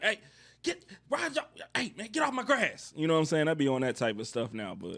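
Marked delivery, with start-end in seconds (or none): 0.0-2.9 very high, hollering, screaming yell. Retelling how he yells at people on his lawn: imitating himself screaming. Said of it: "I be out there screaming like".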